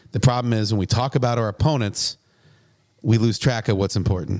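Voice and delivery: ordinary talk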